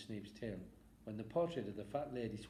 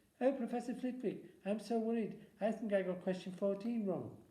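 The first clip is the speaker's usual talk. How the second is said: very high, loud, teasing mocking put-on voice; 12 semitones higher, 5 dB louder than usual. Narrator reads a boy mocking his friend's worry, in a high mocking voice. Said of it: "he put in a high voice".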